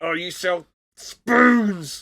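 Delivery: shrill, booming, strained words through clenched teeth. Retelling how a man held it in instead of screaming, imitating talking through his teeth. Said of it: "just does it through his teeth".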